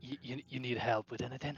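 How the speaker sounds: hushed whisper. Someone behind an investigating character offers help, whispering. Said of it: "behind me whispering and asking what I'm doing".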